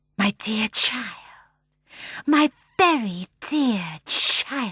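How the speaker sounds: dainty, small, delicate, sibilant hissing snake voice. Narrator voices the hamadryad coming out of the cages: small delicate hissing voice. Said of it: "said a small, delicate, hissing voice".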